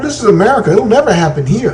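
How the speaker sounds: nonchalant, dismissive tone.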